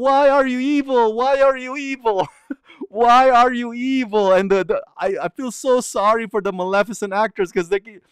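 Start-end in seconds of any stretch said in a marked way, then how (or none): 0.0-4.3 put-on high, drawn-out little children's yell. Retelling how little kids chased a costumed Maleficent: imitating kids yelling. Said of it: "they're yelling".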